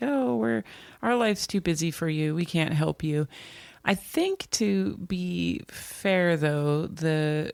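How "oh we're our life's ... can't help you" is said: mock flippant dismissive tone. Retelling how the book's children answer their parents' calls: imitating flippant adult children. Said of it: "they're very flippant".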